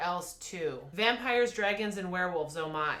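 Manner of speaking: normal talking voice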